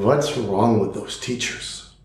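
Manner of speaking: put-on, imitated heavy Polish accent. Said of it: "with a heavy Polish accent".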